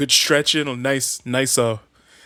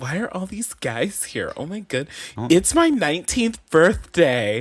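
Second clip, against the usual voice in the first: mock, put-on coy tone; 3 semitones higher than usual. Repeating the other speaker's quoted line back: imitating a coy voice. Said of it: "a coy little".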